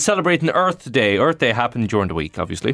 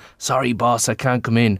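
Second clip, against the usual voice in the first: put-on whispering, lower; 3 semitones lower than usual. Reading out a listener's text, the caller's excuse to the boss: imitating a whisper. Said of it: "and I whispered".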